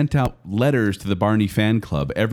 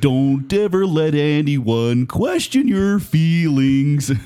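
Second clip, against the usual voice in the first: slow, high-pitched, congested, stuffy-nosed voice; 6 semitones higher, 3 dB louder than usual. Imitating lines Barney had in his songs: Barney voice. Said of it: "try to sound like we have a cold".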